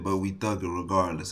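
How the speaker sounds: ordinary talk, nothing marked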